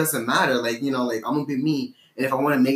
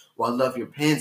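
acted whispering. Retelling a compliment on the pins: imitating someone whispering. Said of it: "And she whispers".

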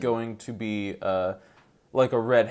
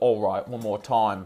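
put-on Australian accent throughout. Imagining Jason Statham coming out of retirement, in an Australian-accented Jason Statham impression. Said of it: "he's Australian in my accent".

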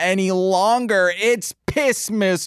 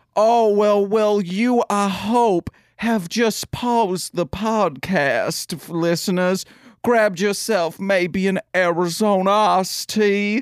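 put-on Louisiana bayou accent. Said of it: "teaching me how to speak in a nice Bayou accent".

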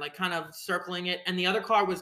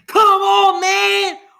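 very loud, high, shrill belligerent scream; 13 semitones higher, 14 dB louder than usual. Retelling a driver who got out of his car: retelling a belligerent scream. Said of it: "belligerent. Absolutely belligerent".

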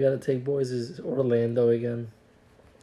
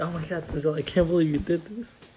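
ordinary delivery

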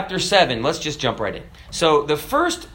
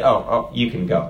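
low, sheepish, backing-down put-on voice; 5 semitones lower than usual. Retelling how a man looked at his civilian ID and answered, imitating him sheepishly. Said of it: "he kind of sheepishly said".

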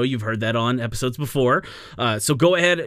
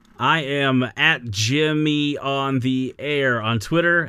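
very slow, deliberate delivery, word by word. Co-host giving a twitter handle while having to think of it, speaking very slowly. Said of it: "so I spoke very slowly".

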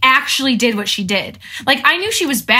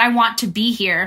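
normal talking voice

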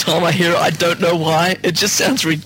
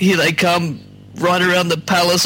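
plain

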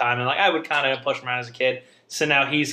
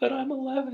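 shrill, muffled, acted sob through tears; 12 semitones higher, 6 dB quieter than usual. Recalling a family story, the speaker imitates a crying boy on the stairs; imitating a muffled cry. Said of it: "we just hear this like muffled cry".

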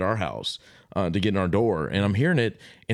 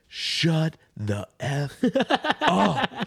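put-on, very slow, loud, stretched-out bellow; 6 semitones higher than usual. Retelling yelling at strangers kicking in the door: imitating own loud yell. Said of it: "I yell as loud as I can".

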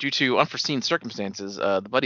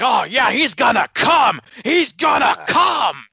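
shrill, very high, very loud, slow, drawn-out delivery; 9 dB louder than usual. Retelling how a wrestler mocked a storyline: Vince impression. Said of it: "started doing a Vince impression".

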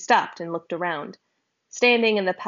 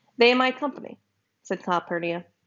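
ordinary delivery, nothing marked

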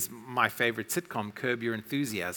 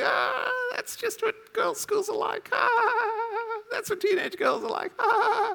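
put-on very high voice through fits of laughter, drawn out; 3 dB louder than usual. Retelling Freya's reaction to the audience: imitating Freya laughing hard. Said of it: "Freya's killing herself laughing, going".

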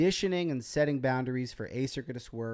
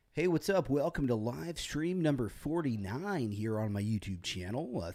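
put-on professional radio announcer voice; 3 dB quieter than usual. Opening live stream number 49 on YouTube in a professional radio voice. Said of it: "That's my radio voice, by the way. It's my professional radio voice".

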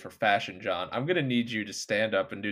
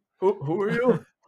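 put-on old man voice, much higher pitch; 11 semitones higher, 6 dB louder than usual. Imagining Mikko Koskinen answering a man at his house, in an old man voice. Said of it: "I give him an old man voice".

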